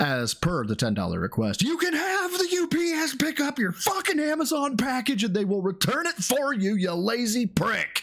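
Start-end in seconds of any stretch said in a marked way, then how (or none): 1.6-8.0 pitched-up fake shout with emotion behind it. Reading out a viewer's message on request: put-on yell. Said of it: "Please yell the caps part".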